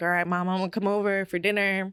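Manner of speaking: plain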